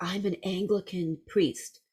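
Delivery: hushed, soft, secretive half-whisper, close in. Speaker retells how a woman leaned in close and spoke to them: retelling a half-whisper. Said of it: "and she whispers, she goes".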